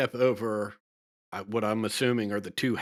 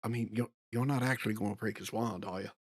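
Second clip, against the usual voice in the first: much quieter, hushed, faster; 6 dB quieter than usual. Retelling a moment, turning aside to Rokea in a much quieter voice. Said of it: "in a much quieter voice".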